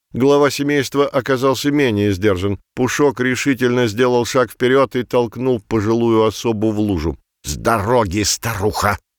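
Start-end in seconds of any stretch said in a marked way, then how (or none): 7.5-9.0 words hissed out in a hissing voice. Belyak hisses at an elderly cat who blocks the family's path. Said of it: "зашипел Беляк".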